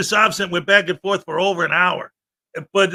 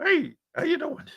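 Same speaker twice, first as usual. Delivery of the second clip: goofy, very high, soft put-on puppet voice; 9 semitones higher, 7 dB quieter than usual. Talking about the weekend, the speaker breaks into a silly high puppet voice. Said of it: "What am I, Kermit the Frog here?".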